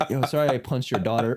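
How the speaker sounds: mock-apologetic put-on voice. Joking about people on crack, imitating an apologetic crackhead. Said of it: "The apologetic crackhead".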